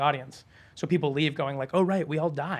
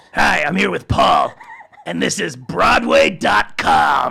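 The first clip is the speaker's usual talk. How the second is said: very loud, rough character voice; 12 dB louder than usual. Answering a request to hear Beetlejuice say a tagline: Beetlejuice voice. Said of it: "I wanna hear Beetlejuice say Broadway dot com".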